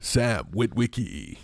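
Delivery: deepest, low robot leader voice. With a newly deeper voice, the speaker says a name around the house, Optimus Prime voice. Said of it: "progressively deeper voice".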